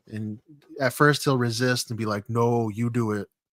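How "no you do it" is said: very slow, ponderous, every word dragged out. Retelling what the game's hired Vader says when refusing an order: Darth Vader voice. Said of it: "in a Vader".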